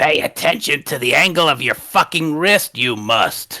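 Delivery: put-on goblin voice. A character correcting someone's punching practice, in a goblinish voice with Yoda-like cadence. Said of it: "in his goblinish voice".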